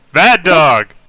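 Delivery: shouting. Playing a character yelling at the dogs from the warehouse: yelling in character. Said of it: "I'm literally yelling at you from the warehouse".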